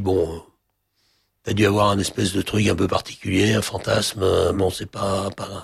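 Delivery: ordinary talk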